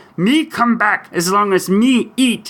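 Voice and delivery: high monster character voice. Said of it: "you do my best Cookie Monster impersonation".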